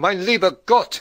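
startled, high, agitated cry of alarm. A woman looks at the clock and jumps to her feet, exclaiming in agitated alarm. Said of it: "she exclaimed".

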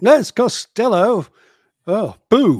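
very loud, very slow, high booming angry drawl. Cutting in on a Halloween show opening, sounding angry. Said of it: "Oh, you sound angry, Costello".

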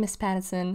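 usual speaking voice

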